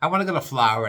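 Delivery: New York way of talking. Talking about flying to Florida, the speaker mimics how New Yorkers talk, with a New York accent. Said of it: "Why do they talk like that in New York?".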